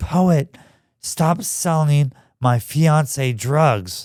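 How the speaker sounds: mock crying, high, loud, tearful pleading voice. Retelling a late-night phone call from a crying girl: imitating a crying woman. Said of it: "she's crying. She's like".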